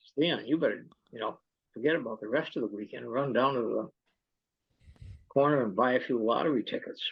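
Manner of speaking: usual speaking voice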